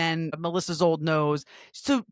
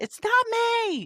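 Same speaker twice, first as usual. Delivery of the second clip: play-acted, very high, shouted yell. Retelling an argument, acting out a woman yelling at a man who questioned her. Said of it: "And Tamara yells".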